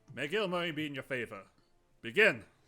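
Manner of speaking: very loud, booming, ringing voice. A game master voices the head cleric starting a fight, voice ringing out. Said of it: "the head cleric's voice ring out".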